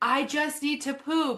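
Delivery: very high-pitched, slow, drawn-out screaming. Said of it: "screaming at".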